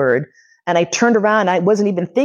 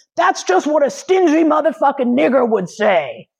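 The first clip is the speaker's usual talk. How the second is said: mock full, high-pitched scream; 7 semitones higher than usual. Retelling a man yelling at him as he boards the bus: imitating a man screaming. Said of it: "I hear this guy screaming".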